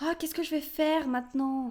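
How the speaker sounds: tiny, thin, small, high-pitched voice. Locked out at the empty portrait, she asks what to do in a small high-pitched voice. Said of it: "dit-elle d'une petite voix aiguë".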